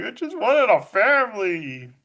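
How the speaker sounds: mock tearful crying, slow and drawn out. Retelling a film scene where a character cries: imitating someone crying. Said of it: "she does the crying thing".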